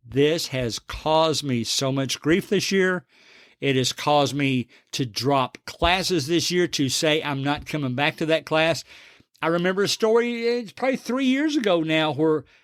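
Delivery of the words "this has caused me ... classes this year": ordinary talk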